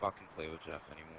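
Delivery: bitter, very low, soft muttered grumble.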